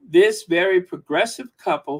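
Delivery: ordinary talk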